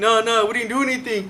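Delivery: put-on, tearful, crying, begging whimper. Retelling a mugging, quoting a companion's plea, imitating George crying. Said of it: "George was like crying like a little bitch".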